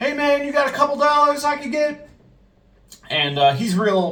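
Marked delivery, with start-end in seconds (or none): 0.0-2.1 play-acted, pushy, very high, aggressive shout. Retelling a man walking in and shouting at the general manager: retelling a shout. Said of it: "he starts shouting at my general manager".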